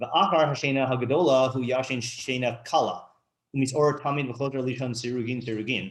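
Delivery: ordinary talk, nothing marked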